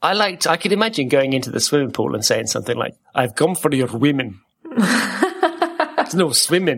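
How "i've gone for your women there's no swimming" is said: really bad put-on Russian accent, slow. Speaker imagines saying something at a swimming pool, in a really bad russian accent. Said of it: "in a kind of a really bad Russian accent".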